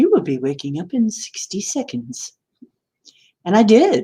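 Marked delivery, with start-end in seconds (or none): 0.0-2.3 haughty, sing-song computer announcer voice. Recounting a weird night, the speaker repeats the announcement in a snooty computer voice. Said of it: "the snooty computer voice".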